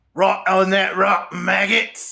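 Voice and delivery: scratchy pirate voice. Reading game dialogue aloud, voicing a pirate on an escaping ship: scratchy pirate voice. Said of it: "Answers a scratchy voiced pirate".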